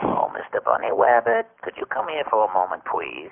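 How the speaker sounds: low-pitched cartoon hunter character voice. Voice actor, asked for a bit of his Space Jam voices: Elmer Fudd voice. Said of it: "Give me a little bit of those guys".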